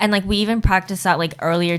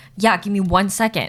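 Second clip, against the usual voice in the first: mock, put-on aggressive tone. Retelling how the guy answered her request for a water bottle, mock-aggressive reply. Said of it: "this like tone of voice that was just like aggressive".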